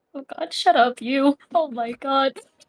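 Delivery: tearful outburst, voice catching, choked up. Moved after being told she is a proud parent's daughter, tearing up. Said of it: "I'm tearing up a little bit".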